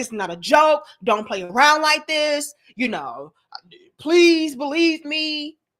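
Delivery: acted, firm, stern, earnest pleading. Imitating a woman in a clip pleading her case sternly: imitating someone pleading sternly. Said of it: "She's being very stern".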